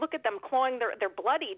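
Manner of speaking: ordinary delivery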